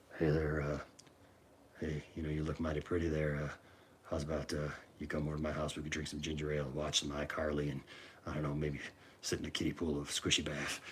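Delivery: very low, hushed, close-mic ASMR murmur. Retelling a character voice a friend did on the mic: imitating Taboo Uncle's quiet low voice. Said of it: "be really quiet, and it was almost an A S M R kind of thing".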